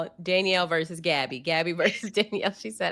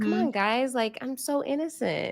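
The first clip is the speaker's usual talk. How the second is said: gentle, soft, lightened-up voice; 4 semitones higher than usual. Retelling a roundtable moment in a put-on soft voice.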